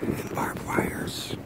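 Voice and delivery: soft, unvoiced, whispered delivery.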